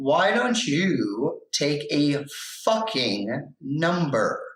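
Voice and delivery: irritated, testy tone with "you" drawn out. Retelling a remark made to the judge while looking him in the eyes: retelling an irritated remark. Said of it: "I was extremely pissy that day".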